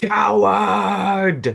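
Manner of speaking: long, ragged, rough, high scream, drawn out. Narrating the game as he disappears, the character yells after him: Shula screaming. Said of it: "as she screams".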